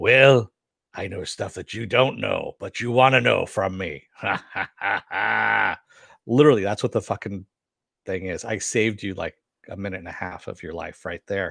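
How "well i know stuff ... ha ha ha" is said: rough, creaky, dubbed-over demon voice with cackle. Spoofing a demon in a straitjacket scene, in a dubbed-over demon voice. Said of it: ""I'm a demon voice".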